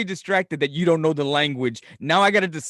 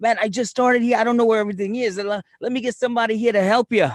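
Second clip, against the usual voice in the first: put-on thick Boston accent, pitched up; 6 semitones higher than usual. Retelling what a new worker told the speaker, put-on thick boston accent. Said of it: "he's got this real thick Boston accent".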